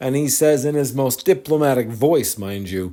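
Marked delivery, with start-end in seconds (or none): none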